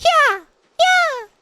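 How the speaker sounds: put-on very high, loud, squeaky cat-girl voice. Mocking a common voice from the Final Fantasy online game, squeaky Final Fantasy voice. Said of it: "so high pitched and squeaky".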